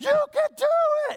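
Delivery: very high cheering yell at the top of lungs. Speaker retelling his daddy cheering him on in the dark, retelling a full-lung yell. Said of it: "He's at the top of his lungs".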